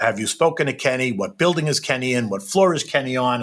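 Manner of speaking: ordinary talk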